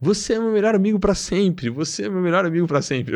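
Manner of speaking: mock repeated high-pitched shout. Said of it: "e sorrindo pra mim".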